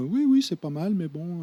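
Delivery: slight, little voice. Retelling the boss's first reaction to the pilot: imitating Jean-Christophe Ramos's small voice. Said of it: "avec sa petite voix comme ça".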